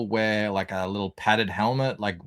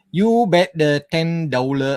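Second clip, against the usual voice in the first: loud, high-pitched Vietnamese accent; 7 semitones higher, 8 dB louder than usual. Showing the accent picked up at Crown Casino: Vietnamese accent. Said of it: "It goes like this".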